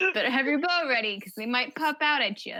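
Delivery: thickly, heavily sarcastic tone. Warning another player about grizzlies in a cave: very sarcastic. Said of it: "I'm being very sarcastic".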